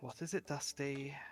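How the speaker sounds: very irritated, annoyed voice. Voicing a presence speaking into a player's mind: very irritated voice. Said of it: "a very irritated voice".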